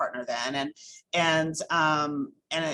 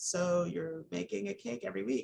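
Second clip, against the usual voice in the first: softly spoken, higher, softer voice. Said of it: "she was like".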